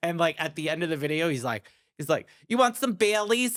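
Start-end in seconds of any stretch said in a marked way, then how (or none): 2.5-3.6 put-on motherly woman's voice with Long Island accent. Retelling the end of the video: imitating a Long Island mother. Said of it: "that's my mother".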